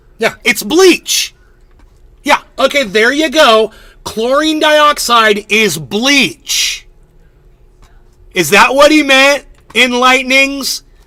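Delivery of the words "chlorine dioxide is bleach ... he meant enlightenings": high, drawn-out, loud yelling. Answering viewers about chlorine dioxide, yelling at viewers. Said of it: "I don't mean to yell at you guys".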